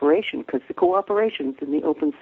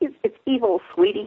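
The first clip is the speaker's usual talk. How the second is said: put-on squawky, high-pitched voice with a Brooklyn accent; 7 semitones higher than usual. Quoting what someone used to say to the speaker, in Murray's squawky Brooklyn voice. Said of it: "in his squawky Brooklyn voice".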